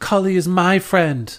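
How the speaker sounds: furious, angry, high-pitched yell. Voicing Kiana defending a friend in a fight: yelling angrily. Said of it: "Kiana also yells back at you and goes".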